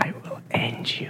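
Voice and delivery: slow, soft, menacing whisper.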